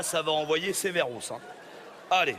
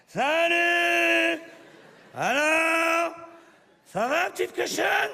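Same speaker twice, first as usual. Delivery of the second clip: put-on very high, loud drunken yell, long drawn-out Salut; 13 semitones higher, 5 dB louder than usual. Retelling coming home drunk into the living room, retelling a drunken shout. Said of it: "en criant".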